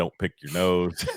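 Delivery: ordinary talk, nothing marked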